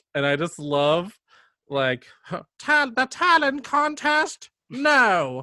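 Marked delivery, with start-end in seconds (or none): 2.6-5.5 very high, slow sing-song, pitch way up, no dragged out. Quoting a favorite movie character, the grandmother: imitating the grandmother's voice. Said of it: "you do her voice, like, phenomenally well".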